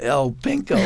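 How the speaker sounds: ordinary talk, nothing marked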